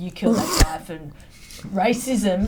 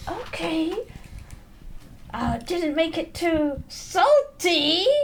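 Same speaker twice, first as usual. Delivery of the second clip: very high, slow delivery through gritted teeth; 10 semitones higher than usual. Voicing Pearl speaking to Maureen, through gritted teeth. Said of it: "through gritted teeth to Maureen".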